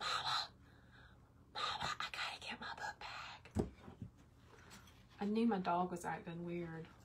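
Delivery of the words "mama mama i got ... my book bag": hushed, soft, breathy whisper. Retelling a scary moment, imitating someone whispering. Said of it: "He's, like, whispering".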